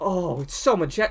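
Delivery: mock awe and wonder. Showing how the characters in the film should react, mock awe. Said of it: "they have to be in awe of it".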